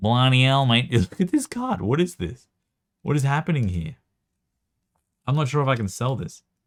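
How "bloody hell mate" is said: full nasal put-on Australian accent, louder, slower. A speaker demonstrating how Australians talk, full nasal Australian accent. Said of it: "the full nasal".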